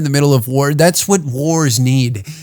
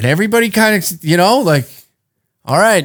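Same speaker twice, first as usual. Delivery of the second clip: ordinary delivery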